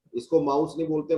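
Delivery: ordinary talk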